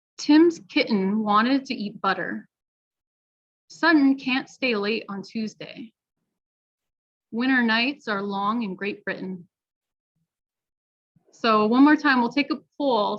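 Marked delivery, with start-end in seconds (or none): 0.2-9.5 everyday American pronunciation of each T. Reading practice sentences aloud for learners to count T sounds, natural American accent. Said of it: "with a natural American accent".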